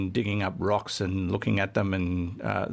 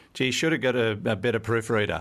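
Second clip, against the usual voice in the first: ordinary talk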